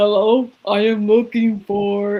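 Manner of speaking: fake, slow put-on male voice. Retelling asking for her boyfriend at his work, in a put-on male voice. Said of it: "I'm going to use a male voice".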